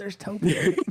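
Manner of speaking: delighted, high-pitched squeal mixed with laughter.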